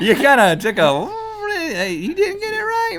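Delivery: very high, very loud, drawn-out squeal. Speaker ruling on the other player's true-or-false answer, in a high-pitched voice. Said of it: "( high pitched voice)".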